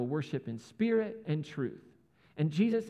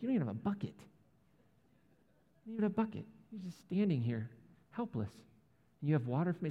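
acted-out strong confusion in a woman's voice, quieter; 4 dB quieter than usual. Retelling the woman at the well questioning Jesus: imitating a really confused woman. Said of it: "she gets really confused".

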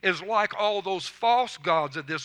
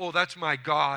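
put-on proud voice; 2 semitones lower than usual. Retelling a taxi driver's answer about his dashboard figure, retelling a proud reply. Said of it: "he said proudly".

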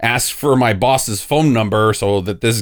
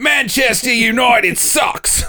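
high-pitched, mocking, put-on Australian accent; 13 semitones higher than usual. The speaker's impersonation is introduced to the group: Australian accent impersonation. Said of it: "Here's [name]'s Australian impersonation".

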